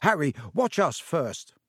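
usual speaking voice

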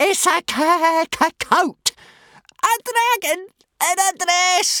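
mocking, very high, slow, drawn-out squeal. Snotlout sees the dragon in a dress, squealing. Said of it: "Squealed Snotlout".

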